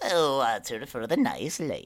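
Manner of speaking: loud, swooping goblin barkeeper voice. A goblin behind the bar answers a request for water, goblin barkeeper voice. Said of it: "a goblin man behind the bar in a very nice tunic".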